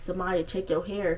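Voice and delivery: ordinary talk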